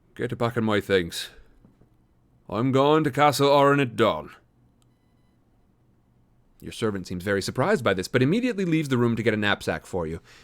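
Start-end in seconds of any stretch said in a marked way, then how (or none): 0.2-4.3 put-on Irish accent. Narrator voicing the adventurer giving orders to his servant, irish accent. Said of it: "I'm going to go ahead and use an Irish voice".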